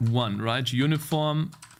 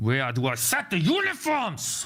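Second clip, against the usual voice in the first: frustrated, irritated, getting angry, swooping pitch; 3 semitones higher than usual. Searching code for where the uniforms are set, frustrated, getting angry. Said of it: "I'm getting so fucking angry".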